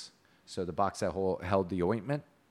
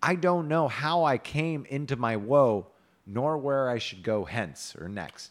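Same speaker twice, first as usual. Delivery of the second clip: ordinary delivery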